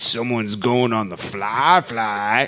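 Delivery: deep, slow voice. Reading a user's submitted bit aloud, deep voice. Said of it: "Deep voice".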